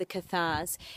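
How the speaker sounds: ordinary delivery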